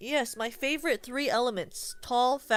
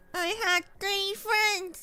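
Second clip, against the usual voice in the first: put-on high-pitched, babyish toddler voice; 9 semitones higher than usual. Speaker trying to do a baby voice, baby voice. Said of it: "Does that sound more like a baby?".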